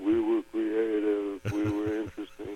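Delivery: low, slow, sheepish, embarrassed mumble.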